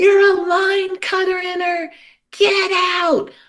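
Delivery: mock crowd yelling, very high and drawn-out. Retelling how fellow passengers shouted as the speaker was put into their line, imitating passengers shouting. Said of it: "started shouting".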